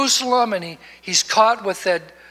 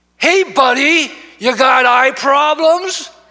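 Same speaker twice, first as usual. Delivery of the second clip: loud, high, drawn-out shout; 4 semitones higher, 7 dB louder than usual. Retelling a teenager calling from a car window: imitating a shout. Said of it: "shouts out his window".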